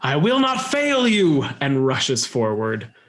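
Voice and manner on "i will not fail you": very high-pitched, furious, enraged shriek. Narrator closing tonight's session as the character rushes forward, Yselm's enraged scream. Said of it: "the enraged face of Yselm as she screams".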